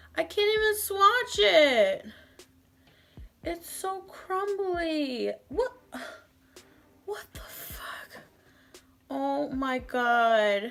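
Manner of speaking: upset, dismayed, distressed, on the verge of tears. Reacting to a product that crumbled onto the floor: upset. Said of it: "I'm so upset".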